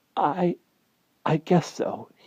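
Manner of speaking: feeble, weak, throaty, very high and slow voice. He answers a worried question from his companion: weak, throaty voice. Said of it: "he said in a weak, throaty voice".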